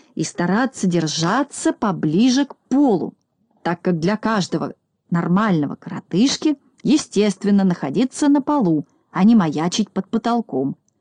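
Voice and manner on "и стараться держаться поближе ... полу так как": ordinary delivery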